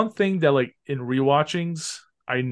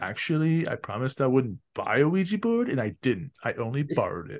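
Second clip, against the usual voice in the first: smug, sarcastic, super snarky tone; 4 dB quieter than usual. Retelling how he answered her about the ouija board, a snarky reply. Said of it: "he was like super snarky".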